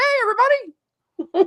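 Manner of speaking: squeaky cartoon voice, very high and loud. Speaker greeting everyone while a guest's accent is undecided, Mickey Mouse voice. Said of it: "I'll just use my universal Mickey Mouse voice".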